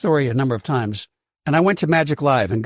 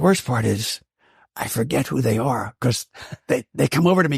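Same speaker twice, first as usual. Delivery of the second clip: speaking in a lowered, hushed voice. Speaker lowers the voice mid-conversation with the other host: lowered voice. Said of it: "I'm lowering my voice".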